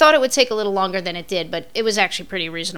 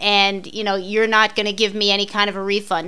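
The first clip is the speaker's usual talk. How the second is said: ordinary delivery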